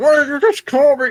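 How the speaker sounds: very high voice, muffled through cloth. Voicing a creature shut inside a bag: muffled voice. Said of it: "muffled from the cloth".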